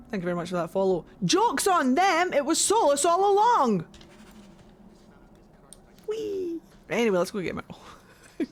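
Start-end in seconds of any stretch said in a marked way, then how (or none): 1.2-6.6 big thrilled full-throated shout, high and drawn out. Reacting with delight to a story twist in the game: big excited shout. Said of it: "I do a big shout!".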